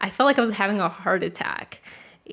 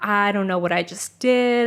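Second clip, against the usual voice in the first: ordinary delivery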